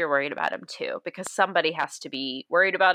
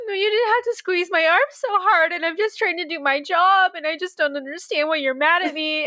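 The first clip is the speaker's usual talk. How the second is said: put-on tearful pleading, fake crying, higher; 11 semitones higher than usual. Retelling a character who plays dumb when caught eavesdropping: imitating fake crying. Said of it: "just really playing it up".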